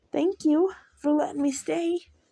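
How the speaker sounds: sugary, sweet, manipulative tone. Reading a story, the little boy thanks Mom for letting him stay; sweet manipulative voice. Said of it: "he says in the sweet voice that he uses to manipulate".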